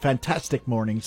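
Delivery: ordinary delivery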